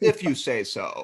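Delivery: deadpan, unmoved delivery. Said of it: "Loomis kind of deadpans".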